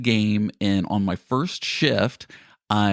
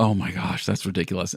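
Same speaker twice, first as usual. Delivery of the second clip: put-on speech while laughing; 2 semitones lower, 3 dB quieter than usual. Retelling getting back up after a fall: imitating own laughing speech. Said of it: "but I was just laughing, going".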